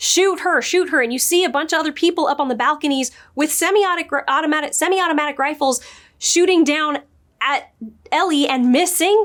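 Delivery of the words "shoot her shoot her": high, loud, shouted tone. Recapping a scene where a running woman calls out to shooters, retelling a yell. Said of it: "she's like yelling out like".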